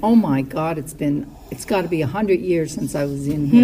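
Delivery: normal talking voice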